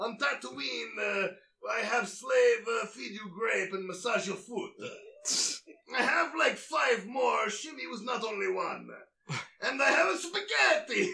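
sci-fi alien character voice. Playing a character in a comedy bit: Watto voice. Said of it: "Watto as Michael Caine".

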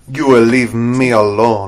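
badly done put-on Russian accent. Imitating an actress's bad Russian accent that almost sounds Irish. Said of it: "she has that really bad Russian accent that almost sounds Irish".

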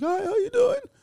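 sudden, out-of-control jump to very high pitch. Showing how the voice jumps while sick: sudden high-pitched voice. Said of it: "suddenly I get very high pitched".

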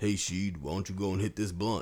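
put-on casual, relaxed, easygoing voice. Retelling how Teddy offered a blunt: Teddy voice. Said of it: "that was actually a very good Teddy voice".

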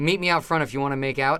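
plain

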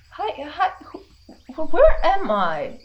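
gentle soft woman's voice. A voice from inside a ring speaks to its wearer, in a very soft female voice. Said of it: "very soft female voice speaking to you".

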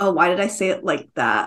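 ordinary talk

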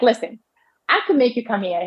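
put-on Southern accent. Quoting the minnesota doctor's words, imitating a southern accent. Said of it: "He had like a Southern accent".

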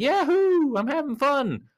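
very high, drawn-out whoop of pure fun. Showing how throwing things is done in a fun way: happy cheer, not angry. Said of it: "Not like a angry way, more like a".

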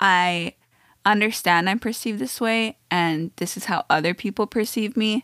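ordinary delivery

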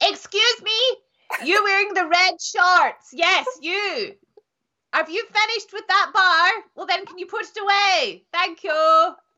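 high, tannoy-style public-address announcer voice. Telling how they address someone across the gym; announcement voice. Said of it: "announcement voice".

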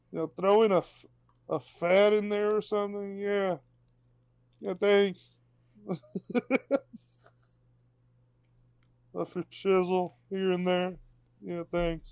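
puppet frog character voice.

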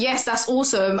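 ordinary talk, nothing marked

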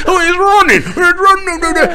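silly, fake British accent, pitched very high. Speaker mimics someone heard on his video; stupid british accent. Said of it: "which is stupid British accent".

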